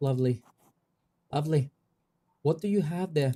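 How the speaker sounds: tentative put-on Irish accent. Trying out a scene, speaking to a woman as ma'am, in an attempted Irish accent. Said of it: "I'm not sure if I can even do a Irish accent".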